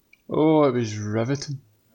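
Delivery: sarcastic delivery. Answering what they thought of the Grand Prix: sarcastic tone. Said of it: "Is that sarcasm I can hear?".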